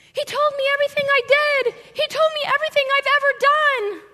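very high, very loud screaming cry. Retelling how the woman at the well ran away, imitating someone screaming. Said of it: "she's screaming".

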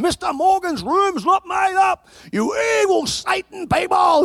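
mock very high, shrill shouting. Retelling a worker on the phone about an unmade room: imitating someone yelling. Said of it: "yelling at people".

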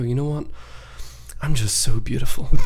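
mock, very spiritual-sounding put-on voice. Imitating a friend who does this to make everyone uncomfortable, mock very spiritual voice. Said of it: "put on his very spiritual voice".

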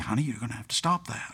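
very gentle, soft, kindly voice. Retelling how a father spoke to his daughter tugging his hair: retelling a very gentle tone. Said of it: "he would just very gently say".

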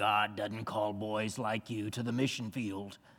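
very low, quiet, hushed gruff murmur. Speaker retells what a church deacon told him as a twelve-year-old, imitating a deacon's gruff voice. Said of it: "He had a real gruff voice".

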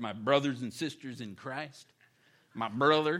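put-on Southern American accent, churchy. Imitating people who call each other brother: southern accent. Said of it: "I don't know why I went Southern there".

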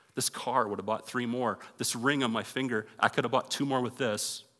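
normal talking voice

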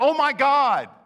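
crying out loud.

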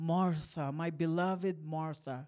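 gentle, tender, loving, kind voice. Retelling a Bible story, the speaker quotes the Lord's reply: quoting a tender, kind reply. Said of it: "with tenderness and kindness in his voice".

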